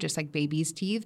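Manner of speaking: ordinary talk, nothing marked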